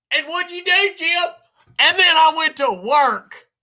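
high, mocking, needling voice.

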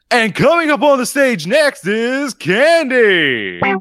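club DJ announcer voice. Speaker says Willie's voice reminds them of a strip club DJ: strip club DJ voice. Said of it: "this voice also reminds me of".

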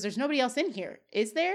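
ordinary delivery

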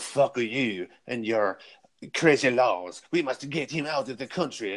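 put-on outrageous, over-the-top French accent, laid on thick. Speaker retelling what Jospin said, in an outrageous Jospin accent impression. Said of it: "Listen to my outrageous accent".

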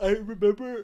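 talking mid-yawn, words stretched through a yawn. Recalling an animal attack video in conversation; yawning. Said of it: "sorry, I'm yawning".

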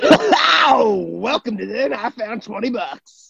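very high, showy radio DJ announcer patter. Opening the podcast after being asked for a radio voice, in a radio announcer voice. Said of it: "Radio voice".

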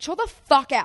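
play-acted, aggressive, shrill, very loud snapping. Retelling a woman snapping at the speaker's boyfriend, imitating a snapping retort. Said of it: "she snapped at him".

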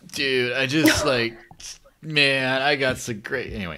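put-on slow stoner drawl. Retelling a man's story of getting into crypto, in a stoner voice. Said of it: "At least put on a stoner voice".

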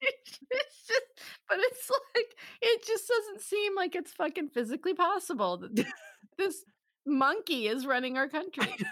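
holding back laughter. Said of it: "just trying not to fucking laugh".

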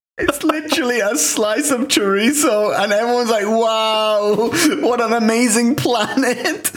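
very high voice, barely holding back laughter. Describing a link they just clicked on, trying not to laugh. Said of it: "I'm trying not to laugh".

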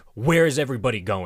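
put-on frantic, alarmed, panicked yell. Retelling how Tyler yelled at a kid in a car: imitating Tyler's panicked yell. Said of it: "he yelled, like".

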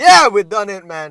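joyful, happy, very loud cheering. Showing how to let happiness out in the voice: happy voice. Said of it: "That is the happiness in the voice".

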